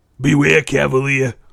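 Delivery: put-on loud Brooklyn accent. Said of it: "not in the Brooklyn accent".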